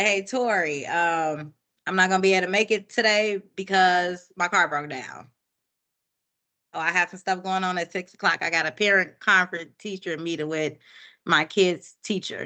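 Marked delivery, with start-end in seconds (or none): none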